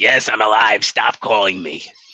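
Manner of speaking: put-on slow, drawn-out smoker grandma drawl. Joking about a call into the show to verify a death, in a Bev Bighead voice. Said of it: "You went into like cigarette gun and grandma".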